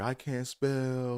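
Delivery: high, blubbering, boo-hooing sobbing voice. Retelling a classmate crying during a spelling test: imitating someone crying. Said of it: "and just crying".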